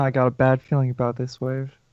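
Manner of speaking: quiet murmuring voice. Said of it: "You can hear him whispering".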